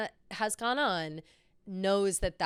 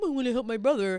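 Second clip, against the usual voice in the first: put-on sad puppy voice, higher and louder; 5 semitones higher, 5 dB louder than usual. Retelling a TV scene, imitating Conrad, sad like a puppy. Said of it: "Conrad sat there like a sad puppy".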